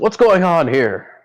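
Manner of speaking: projected professional tone. Walking up on the dock with a business face, she speaks: loud voice. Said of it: "puts a loud voice".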